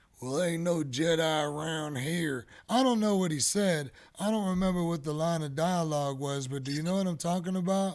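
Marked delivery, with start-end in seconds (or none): 0.2-2.5 thick, put-on country accent. Imitating a villager from the last episode: thick country accent. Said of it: "a thick country accent".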